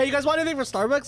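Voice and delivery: high-pitched, eager, rattled off fast.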